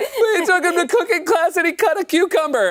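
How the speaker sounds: sobbing with joy.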